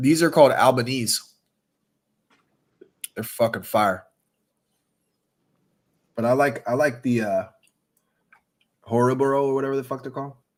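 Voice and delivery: chewing while talking, mouth full, smacking. Describing the gummies while eating them on the show: chewing while talking. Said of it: "you guys might hear me smacking today".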